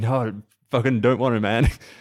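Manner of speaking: put-on reluctant tone. Telling a story about students filming a TikTok, retelling a reluctant refusal. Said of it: "And he's like".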